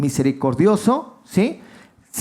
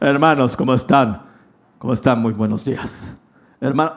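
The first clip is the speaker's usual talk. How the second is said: very low, deep, big announcer voice; 7 semitones lower than usual. Recalling his theology teacher's younger voice: imitating Fernando Nava's voice. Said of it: "pero cuando más joven era una voz así de".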